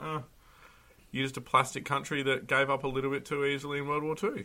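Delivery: ordinary delivery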